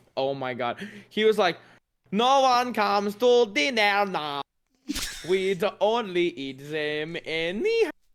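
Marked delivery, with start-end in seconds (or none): 2.2-7.9 bad, hopeless attempt at a French accent. Retelling how Keaton spoke during Kanan Days, imitating Keaton's bad French accent. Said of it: "he could not do a French accent to save his godforsaken life".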